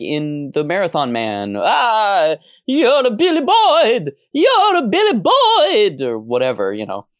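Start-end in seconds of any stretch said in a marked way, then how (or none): 1.6-6.0 put-on very high, loud, slow scream, Scottish accent. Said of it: "Great Scottish accent".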